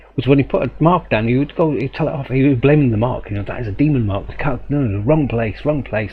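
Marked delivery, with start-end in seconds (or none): none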